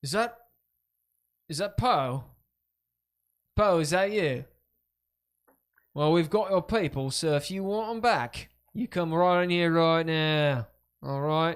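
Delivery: put-on gruff London Cockney accent. Voicing a villain calling poe inside: gruff cockney accent. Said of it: "gruff Cockney, you know, Sigillian accent".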